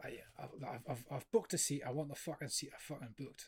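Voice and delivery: put-on Glaswegian accent. Retelling a passenger on a train demanding a booked seat, in a Glaswegian accent. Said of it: "I hear this Glaswegian accent going".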